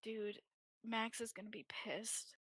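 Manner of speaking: very quiet muttered aside under the breath. A character reacts toward Olympia while others can probably hear, muttered under breath. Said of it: "under her breath just goes".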